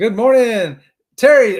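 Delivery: loud, high, big hollering. Greeting viewers in the live chat, hollering a greeting. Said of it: "I'll quit hollering".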